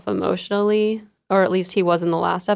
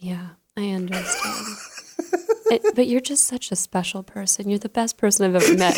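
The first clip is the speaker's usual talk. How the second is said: syrupy, swooping, sugary fake-nice voice. Retelling how a woman spoke to people in confrontations, in a mock syrupy voice. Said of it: "she'd put on this really syrupy voice".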